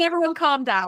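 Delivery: high, loud, mock pleading voice.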